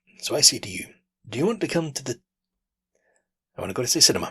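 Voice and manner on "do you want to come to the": high, halting stutter, speech stuck and stalling. Showing how the sentence comes out when stuttering: demonstrating a stutter block. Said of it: "But the stutter comes out".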